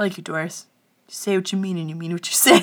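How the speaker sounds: softly spoken quiet voice. Retelling what a man quietly told Doris, in a quiet voice. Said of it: "He's real quiet".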